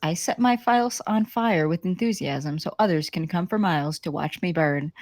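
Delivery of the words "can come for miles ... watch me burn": ordinary talk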